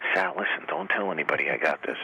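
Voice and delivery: words whispered under the breath, hushed. Retelling how a collector showed off a comic button: imitating someone whispering. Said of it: "he's whispering".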